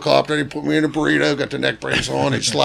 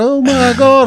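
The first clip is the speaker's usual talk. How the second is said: put-on panicked cry, higher and louder; 11 semitones higher, 6 dB louder than usual. Retelling a fall, imitating Mark freaking out. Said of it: "he's freaking out".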